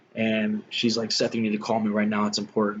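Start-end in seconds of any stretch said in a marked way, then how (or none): none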